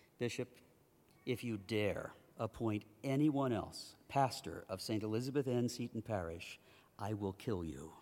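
grave, solemn, low, somber, serious tone. Retelling what he said to Bishop McFadden in his office: retelling a somber, serious tone. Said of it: "I said with a somber and serious tone".

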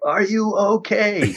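high, put-on yell. Retelling the wife calling down to check: imitating wife yelling. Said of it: "my wife apparently was yelling back down".

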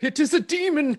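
put-on old-timey 1600s idiot voice. Joking about a Darth Maul scene, playing an old-timey 1600s idiot voice. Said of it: "some old timey 1600s idiot who's like".

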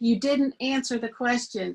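drawn-out loud yelling.

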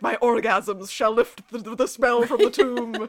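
mock power-drunk boasting. Retelling a character's boast about lifting a tomb spell: imitating someone drunk on power. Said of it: "she's all drunk on the power of Luca".

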